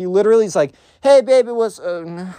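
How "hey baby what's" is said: mumbled, slow and halting. Retelling a failed first approach to a girl: imitating someone mumbling. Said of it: "he just mumbles it into the ground".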